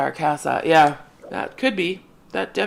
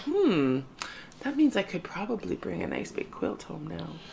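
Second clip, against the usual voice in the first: hushed, very soft, very quiet half-whisper; 10 dB quieter than usual. Quoting own thought as an aside to another speaker: half-whispering. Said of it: "you whisper when you say that".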